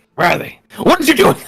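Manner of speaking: frantic, panicky, freaking-out scrambling speech. A character searching for his missing cigars, freaking out. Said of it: "That sounded like him freaking out over his cigars".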